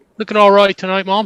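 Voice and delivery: put-on English accent. Retrying a requested compliment to mom, again in an English accent. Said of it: "That's pretty good".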